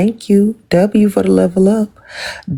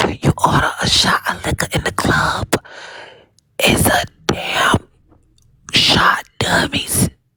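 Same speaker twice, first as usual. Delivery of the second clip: slow, whispered, scolding voice. Rereading a woman's comment to a listener, this time imitating her whispering voice. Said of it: "I should have read it in her voice".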